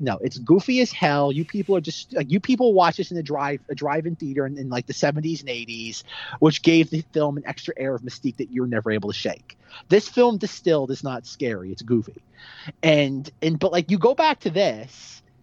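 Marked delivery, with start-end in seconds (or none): none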